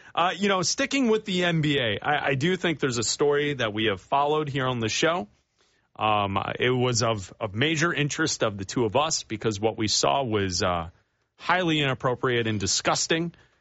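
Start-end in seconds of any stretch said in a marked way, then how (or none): none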